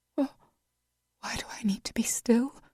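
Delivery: soft trembling voice. A woman asks a man who told her not to move, soft, tremulous voice. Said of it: "her soft voice tremulous".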